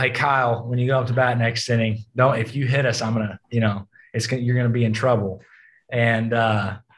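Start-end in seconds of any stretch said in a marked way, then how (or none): none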